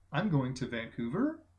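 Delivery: pitch lifts upward on the word Vancouver. Describing how people in vancouver end statements: rising end on vancouver. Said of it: "their voices raise at the end of a sentence".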